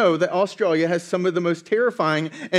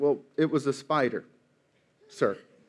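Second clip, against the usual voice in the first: soft, put-on embarrassed, apologetic, sheepish tone; 5 semitones lower, 6 dB quieter than usual. Retelling a police report where a man answers the officer: imitating a sheepish reply. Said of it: "sheepishly responds".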